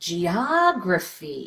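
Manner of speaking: exaggerated stress on strong syllable of geography. Showing learners how to exaggerate word stress: exaggerated stress in geography. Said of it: "Make it so exaggerated that you feel uncomfortable".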